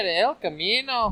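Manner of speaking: put-on Mexican accent. Saying the beer's name after being dared: attempted mexican accent. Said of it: "Go on, then".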